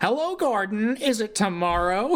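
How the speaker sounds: annoying sassy voice, very high pitched. Retelling how the narrator voices James greeting Gordon; annoying James voice. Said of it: "gives him the most annoying voice".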